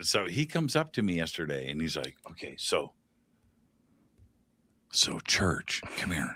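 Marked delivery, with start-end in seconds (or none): 2.3-6.4 hushed stage whisper. Retelling how someone came up to him yesterday, imitating someone whispering. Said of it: "why are you whispering?".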